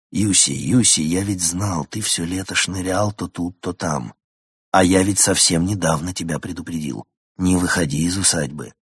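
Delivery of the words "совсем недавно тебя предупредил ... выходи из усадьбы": ordinary delivery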